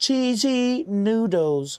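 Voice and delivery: attempted British accent. Speaker tries out a British accent for a few words: attempted British accent. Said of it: "That's my that's my best version of British".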